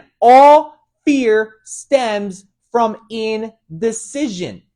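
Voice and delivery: very slow, loud, deliberate, word-by-word delivery. Speaker repeats a key idea so listeners understand: saying it really slowly. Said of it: "I'm going to say it really slowly".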